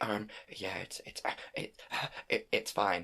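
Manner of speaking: barely breathed, slow and hesitant. Retelling a movie dress scene, answering about a dress: Kristen Stewart impression. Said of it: "that was my impression of Anna Ke-, uh, of, of, of Kristen Stewart".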